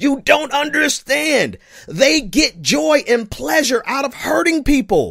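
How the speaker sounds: shouting outward. Speaker addressing listeners who don't understand, yelling at them: yelling. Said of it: "I'm yelling at you".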